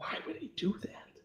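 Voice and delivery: hushed, whispered mutter under the breath. A character reacts to someone standing in Rufus's line of sight; muttered under his breath. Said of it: "you sort of hear him under his breath say".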